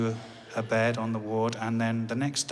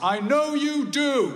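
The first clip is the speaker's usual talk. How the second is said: loud, very high-pitched called-out voice; 5 dB louder than usual. Leaving the hospital ward, the speaker retells what his dad called after him: loud voice. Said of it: "in a loud voice".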